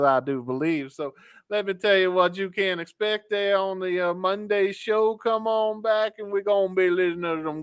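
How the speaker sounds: put-on old Southern boy's accent. Show host previewing the monday show, old southern boy accent. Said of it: "listen to me talk like this".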